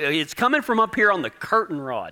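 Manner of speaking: ordinary delivery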